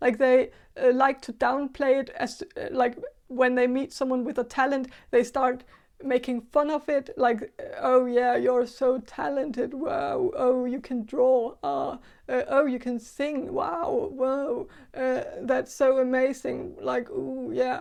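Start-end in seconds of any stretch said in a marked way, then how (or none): 7.8-17.8 slow, sarcastic, mocking fake gushing admiration. Describing how people make fun of someone's talent, imitating sarcastic praise.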